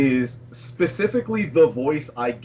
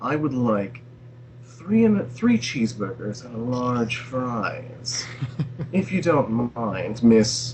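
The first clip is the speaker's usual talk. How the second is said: slimy, sleazy, faintly threatening put-on character voice; 2 semitones lower than usual. Showing off a voice you couldn't use in public: creepy put-on character voice. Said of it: "it's just such a delight to use that voice".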